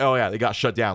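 ordinary talk, nothing marked

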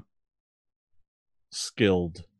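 halting broken Common. Voicing a character who answers in broken Common: speaking broken Common. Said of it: "in broken common".

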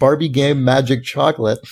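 ordinary talk

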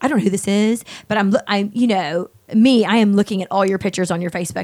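normal talking voice

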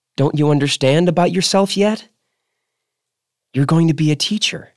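gentle and unguarded. Sloan leans close to Stoner in the office, speaking gentle and unprotected. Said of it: "mocking voice become gentle and unprotected".

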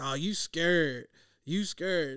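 slow, put-on, teasing, mocking jeer. Retelling taunts other people threw at the speaker: imitating a mocking taunt. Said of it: "I took that slander".

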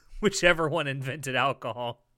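ordinary talk

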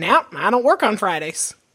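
put-on Southern-accented banker voice. Imitating a football coach pictured as a Southern banker: Steve Spurrier as a Southern banker. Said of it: "Steve Spurrier as, like, Southern banker, being like".

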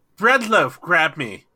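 very loud bellowing yell. Reaching out to grab someone's hand in a game: yelling in character. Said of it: "I'm just gonna yell".

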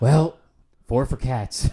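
weary sighing tone. Retelling a woman buying movie tickets: imitating a weary sighing line. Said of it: "she just kind of sighed and went".

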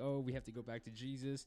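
normal talking voice

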